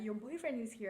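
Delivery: mock playful, teasing, ribbing tone. Retelling a mom repeating a remark to her daughter: imitating teasing. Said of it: "elle me taquinait".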